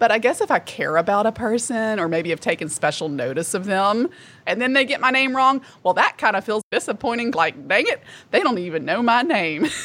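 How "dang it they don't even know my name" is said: put-on Southern accent with a twang. Speaker voicing their own thought when someone gets their name wrong, southern twang. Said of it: "I love that southern twang there".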